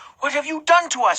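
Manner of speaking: very high, hissed. Narrator reads Mary, holding Jesus's face between her hands: hissing. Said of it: "she hissed".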